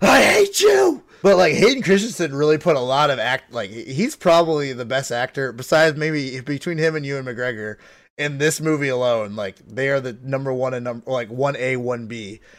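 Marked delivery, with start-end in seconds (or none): 0.0-1.0 piercing, shrill, very high screamed outburst. Retelling a melting marshmallow face video: imitating a scream. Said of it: "that scream he yells with the "I hate you,"".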